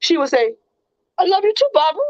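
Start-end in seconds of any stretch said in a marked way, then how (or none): 1.2-2.0 question-like rising pitch on Barbara. Quoting how she would answer at the end, rise on Barbara like a question. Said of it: "Like that. Like it was a question".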